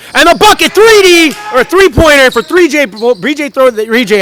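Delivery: high-pitched, excited stuttering, tripping over the words. Calling a basketball game, stumbling over a player's three-pointer with excited stuttering. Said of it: "I'm stuttering. I'm so excited".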